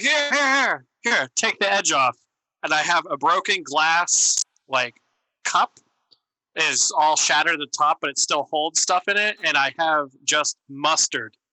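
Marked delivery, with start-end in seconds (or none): 0.0-2.2 high, swooping, thrilled yell, bursting with eagerness. Playing a character running over from the dumpster, excited yelling. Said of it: "I'll yell excitedly from the dumpster".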